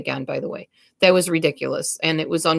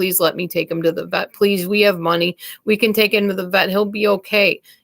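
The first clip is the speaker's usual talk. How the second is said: mock urgent, desperate, pleading tone; 2 semitones higher than usual. Retelling begging an ex-husband to take a dying kitten to the vet: retelling own desperate begging. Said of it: "And I was begging him".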